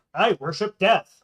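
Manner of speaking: loud mock declaiming. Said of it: "how loudly do these robes pro-, proclaim".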